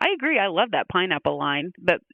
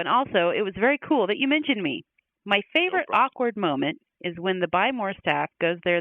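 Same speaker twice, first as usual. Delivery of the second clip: ordinary talk, nothing marked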